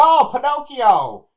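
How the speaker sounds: very high, loud, slow, excited announcing exclamation. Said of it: "He just said that real loud".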